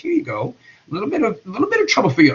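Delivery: put-on British accent, swooping and sing-song. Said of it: "I say with a British accent".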